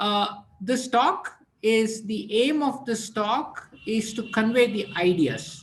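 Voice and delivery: speaking a little slow, careful lecture pace.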